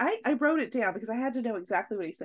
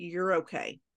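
mock-stern delivery, put-on, voice pitched much lower; 6 semitones lower than usual. Speaker recalls how he said it to her, retelling a stern order. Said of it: "The way he said it was".

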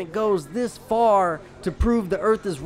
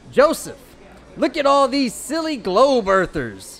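put-on, sing-song Midwestern accent; 3 semitones higher, 4 dB louder than usual. Reading out a response addressed to joseph, in a midwestern accent. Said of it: "Do this one in a Midwestern accent".

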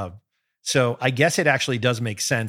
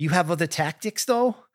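put-on Boston accent, pitched higher; 6 semitones higher than usual. Recapping a courtroom scene, quoting the sister in a Boston accent. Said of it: "saying in her Boston accent".

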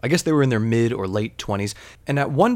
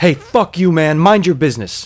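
put-on, sudden, loud, explosive, snapping angry outburst; 4 semitones higher, 8 dB louder than usual. Retelling a stranger snapping at a tall regular: imitating an angry outburst. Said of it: "the homeless dude snaps".

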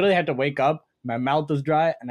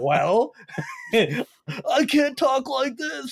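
mock choking on every word, higher pitch; 11 semitones higher than usual. Retelling own past words while sick: imitating choking on every word. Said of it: "choking on every word".

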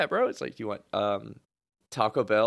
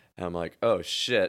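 normal talking voice

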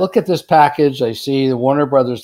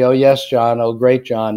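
mock, sycophantic fawning, flattering tone. Retelling what people around the boss always say: imitating sycophantic flattery. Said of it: "people were like sycophants around John".

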